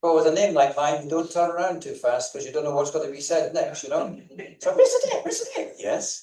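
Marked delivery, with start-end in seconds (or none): 4.7-5.7 tiny, piping little voice, very high. A coach retells someone calling his name while he works, in a little voice. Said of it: "you hear a little voice".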